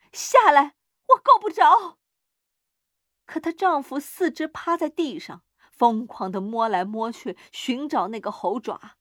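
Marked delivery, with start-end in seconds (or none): 0.2-2.0 loud, high, called-out shout. The old woman, straining at the door bolt, calls to her husband, shouting loudly. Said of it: "她大声喊道".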